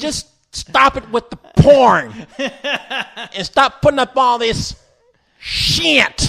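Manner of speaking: put-on Kentucky accent. Imitating how a teenager talks in his YouTube video: imitating a Kentucky-sounding teenager. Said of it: "he talks like this".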